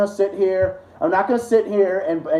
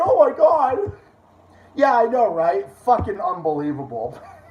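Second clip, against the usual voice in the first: sarcastic, mock dismay and despair; 2 semitones higher than usual. Reacting to being blocked online: sarcastic mock dismay. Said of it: "My sarcasm".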